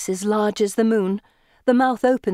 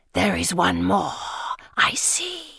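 hissing, lower pitch; 3 semitones lower, 3 dB quieter than usual. Narrator reads the creature's line in the story, hissing. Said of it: "it hisses".

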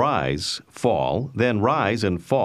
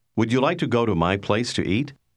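usual speaking voice

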